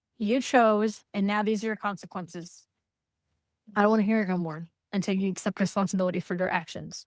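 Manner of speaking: ordinary delivery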